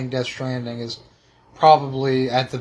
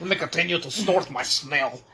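put-on mocking French voice; 3 semitones higher, 4 dB quieter than usual. Imagining what French listeners would say about the hosts: imitating French listeners. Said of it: "They're like".

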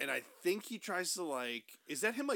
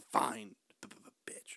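mock mutter under breath, lower; 8 semitones lower, 6 dB quieter than usual. Retelling a rejected boy's reaction before he leaves, retelling a mutter under his breath. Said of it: "under his breath".

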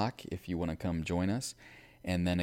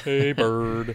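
put-on flat unexcited voice, higher and louder; 4 semitones higher, 8 dB louder than usual. Teasing another speaker who sounded unexcited last week: Snuffleupagus voice. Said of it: "You're like Snuffleupagus on Sesame Street".

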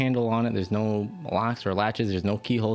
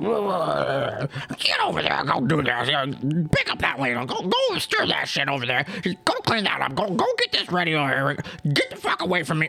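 bossy barking goblin voice, wide pitch swings; 6 semitones higher than usual. Narrating a goblin leader yelling at all the other goblins; low yelling goblin voice. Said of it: "one lower voice sort of yelling at all the other goblins".

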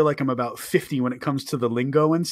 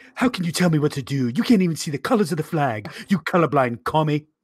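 put-on cartoon character voice. Doing a cartoon character bit with another speaker: Stewie Griffin voice. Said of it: "So I'm like".

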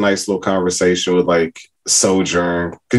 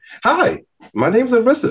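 very high, sweet, sing-song cute voice, drawn out. Describing how the game character talked in the first game, lovable Orisa voice. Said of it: "she was like lovable in the first one".

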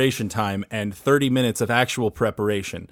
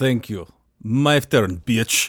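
put-on Russian accent. Playing a wrestling heel taking the mic: put-on russian accent.

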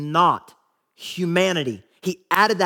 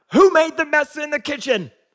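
irate scolding tone in a very high voice; 9 semitones higher, 4 dB louder than usual. Showing how an angry parent would ask about a mess: angry parent scolding. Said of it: "like an angry parent looking around like".

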